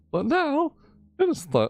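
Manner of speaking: high-pitched voice breaking mid-line. Reading an event announcement aloud and stumbling over it, voice cracking. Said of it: "Does my voice crack?".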